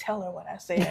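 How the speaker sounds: put-on child's whisper. Retelling how a child whispered a request during therapy: imitating a child whispering. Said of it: "whisper to my ear".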